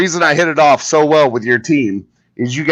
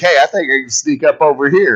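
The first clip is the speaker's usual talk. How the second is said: plain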